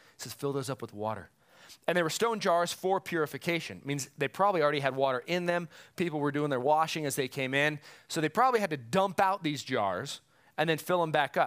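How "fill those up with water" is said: put-on whisper, lower and quieter. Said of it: "he whispers at him".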